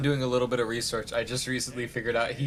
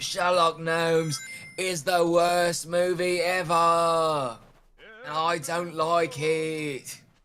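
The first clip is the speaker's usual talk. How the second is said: fake, high-pitched yell, "it" stretched out; 5 semitones higher, 3 dB louder than usual. Mocking a man's review of sherlock gnomes to the others, imitating a reviewer's fake yell. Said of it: "he fake yells like that".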